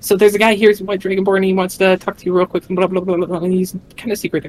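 very fast rattled-off chatter. Retelling what a woman said over a copper-wire call, very fast talking. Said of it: "she's, like, talking so fast".

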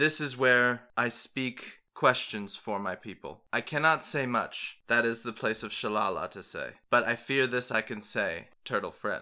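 halting, stilted, oddly formal character voice, broken grammar. A game master's character answers the players about a stolen relic, formal, broken-grammar NPC voice. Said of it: "He kind of looks at you and says, / and [name] says, / Came 2 months prior with key to temple. Lost key. Key never found for generations and generations".

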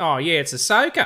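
put-on Australian accent. Acting out a phone call where the father reports heavy rain: imitating an australian complaining about rain. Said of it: "when an Australian person tells you it's been wet".

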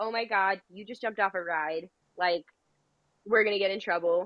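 plain

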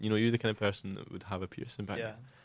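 ordinary delivery

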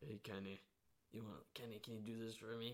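very soft, quiet, hushed, soft-spoken voice. Retelling how he asked Kenny for something: imitating soft-spoken talk. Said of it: "he talked very soft".

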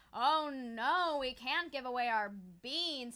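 knowing sarcasm with perfect comic timing. Quoting the baker's wife's line: imitating a sarcastic line. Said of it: "perfect kind of sarcastic".

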